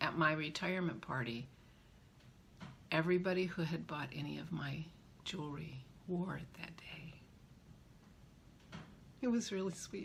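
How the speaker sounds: soft, teary, choked-up voice on verge of tears. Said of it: "Look at me, I'm crying".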